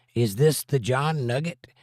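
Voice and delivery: normal talking voice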